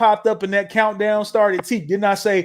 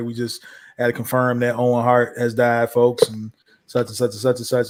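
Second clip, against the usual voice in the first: put-on grave, solemn, very somber announcer delivery; 9 semitones lower than usual. Retelling how a death was confirmed after the commercial break: imitating a somber voice. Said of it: "like, a really somber voice".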